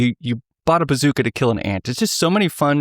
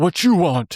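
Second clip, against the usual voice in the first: put-on grunting ogre voice, higher; 6 semitones higher than usual. Retelling what the software said as someone joined a call, ogre grunt voice. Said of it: "Just like in the ogre grunt".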